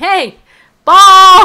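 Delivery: very loud, shrill, high, full-volume shout. Showing how players ask for the ball back: shouting. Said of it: "that was kinda loud".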